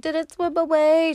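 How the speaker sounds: play-acted very high, loud hysteria, drawn out. Retelling a movie scene with a fish: imitating a hysterical girl. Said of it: "She's all, like, hysterical".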